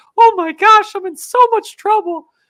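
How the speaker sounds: shrill, very high, loud squeaky yelp. Retelling what a friend said in a video, imitating James's high voice. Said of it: "who had a very high voice at the time".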